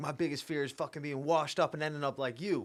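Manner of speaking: fierce, high, heated half-screamed outburst. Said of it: "screaming at him".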